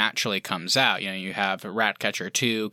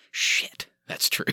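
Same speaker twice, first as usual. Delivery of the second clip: put-on mutter under breath, slower. Retelling a movie scene where a character turns around and replies, retelling a mutter under breath. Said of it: "under his breath".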